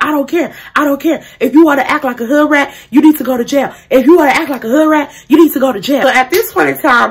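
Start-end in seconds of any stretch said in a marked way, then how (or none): 0.0-6.0 acted-out yelling, ranting voice. Retelling how the police officer reacted during the arrest: imitating a cop yelling. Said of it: "Basically just yelling".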